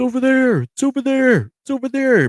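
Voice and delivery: very high, loud, repeated hollering. Retelling hearing men outside at night: imitating men yelling. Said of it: "You could hear a bunch of yelling".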